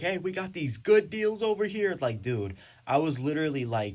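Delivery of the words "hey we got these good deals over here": high, loud carnival-barker yell. Retelling selling books at an event, imitating own yelling at people. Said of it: "I was really yelling at people".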